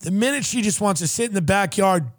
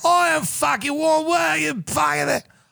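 put-on drunk Australian accent, pitched up; 8 semitones higher than usual. Retelling what a drunk, screaming woman said, in a put-on Australian accent. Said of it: "It's hard to do the Australian accent".

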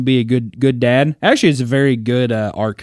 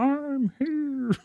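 put-on soft, very high-pitched far-away yell; 14 semitones higher, 10 dB quieter than usual. Describing a player in the game screaming by himself, imitating distant screaming. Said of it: "you can hear him just screaming by himself".

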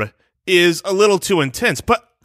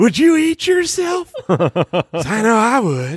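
seductive put-on voice, higher pitch; 5 semitones higher than usual. Asking a silly question to the others: seductive Will Ferrell voice.

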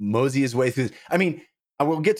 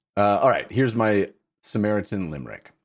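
plain

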